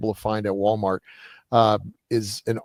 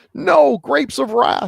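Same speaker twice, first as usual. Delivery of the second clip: slow, raised, rasping high voice, drawn out; 7 dB louder than usual. Retelling an interview, imitating the actor answering the interviewer: John Carradine voice. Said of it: "in that great voice".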